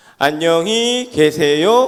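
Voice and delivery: put-on five-year-old's singsong intonation and lilt. Recalling a young child saying goodbye to the teacher, five-year-old child's intonation. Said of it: "대여섯 살 정도 되는 아이의 특유한 억양이 있어요. 어떤 거냐면은 이렇게 인사하더라고요".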